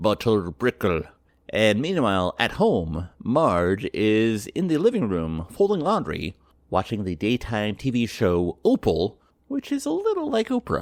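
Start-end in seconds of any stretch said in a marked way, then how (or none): 0.0-1.0 put-on British accent. Recapping a cartoon scene where Homer Simpson speaks; Homer Simpson in a British accent. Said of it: "in a British accent".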